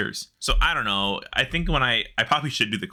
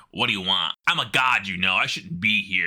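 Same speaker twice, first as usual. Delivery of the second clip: mock sassy spirit voice, lower pitch; 3 semitones lower than usual. Retelling what a quest spirit said: imitating a sassy spirit. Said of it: "this sassy fucking spirit who's like".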